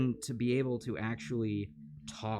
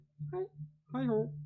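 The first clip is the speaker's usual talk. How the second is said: put-on frog puppet voice; 14 semitones higher than usual. Trying out a Kermit impression: Kermit the Frog voice. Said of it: "I tried doing a Kermit before".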